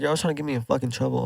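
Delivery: whispered voice. Recounting a fight at school, retelling a whisper. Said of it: "I like whispered like".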